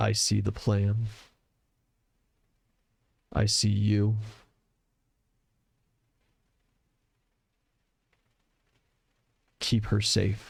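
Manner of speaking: hushed whisper. A bleeding man speaks into the listener's ear, whispering. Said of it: "And he whispers in your ear".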